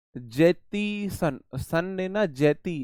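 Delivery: jettison split slowly and dragged out as jeti san.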